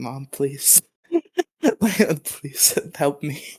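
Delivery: slow, desperate, begging tone. Recounting calling mom for a ride while she yelled over the phone: retelling a desperate plea. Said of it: "she's yelling at me over the phone, and I'm just like".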